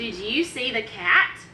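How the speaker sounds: slow delivery, pitch rising at the end.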